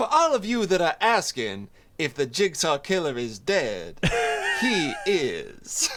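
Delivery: slow, drawn-out, swooping DJ announcer voice. Answering as if on the radio: imitating the radio lady from The Warriors. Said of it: "radio lady from The Warriors".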